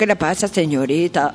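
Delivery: put-on Cuban-accented speech. Retelling a story in which a man questions a young woman, Cuban accent. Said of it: "Del son cubano le dijo".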